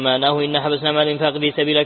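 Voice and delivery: plain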